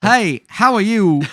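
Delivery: loud, high, slow, drawn-out belted character voice. Imagining Christopher Walken playing Han Solo: Christopher Walken impression. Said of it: "Christopher Walken auditioned for Han Solo".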